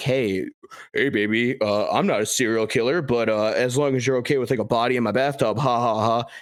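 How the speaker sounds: put-on teasing sarcastic joking with tacked-on laugh. Retelling a short film's dating-app characters joking together: imitating sarcastic joking. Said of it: "They joke about it like".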